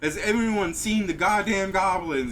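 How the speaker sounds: loud, high-pitched screaming coach voice. Speaker retells the coach yelling while the players hastily dress; imitating a coach screaming. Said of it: "the coach screaming".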